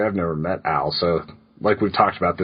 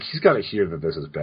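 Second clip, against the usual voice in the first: ordinary talk, nothing marked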